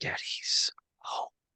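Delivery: soft, breathy, close whisper. Leaning close to a console after caressing it: whispering to the console. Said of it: "I think I would whisper at it".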